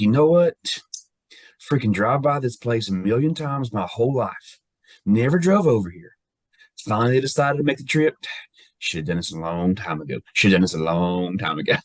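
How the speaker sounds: put-on middle Virginia Roanoke-Richmond accent. Retelling what a man said on a trip, imitating his middle Virginia accent. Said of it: "he had that middle Virginia accent".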